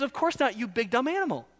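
put-on pointed, deliberate, intentional sarcasm. Giving the answer to a question from the passage: acting sarcastic. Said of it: "it's intentional sarcasm".

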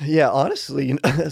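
voice cracking. Starting to answer a question about fasting, voice cracking. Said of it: "sorry, my voice cracked".

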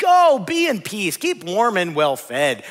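play-acted, sarcastic sing-song, loud and drawn-out. Quoting a speaker in a scripture passage who brushes off someone in need: acting out a sarcastic blessing. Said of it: "Do you hear the sarcasm?".

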